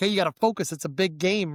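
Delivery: ordinary delivery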